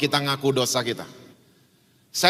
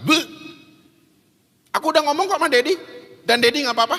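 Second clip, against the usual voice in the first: high, fast, cocky taunting voice. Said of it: "dengan pedenya dia keluarin lidah".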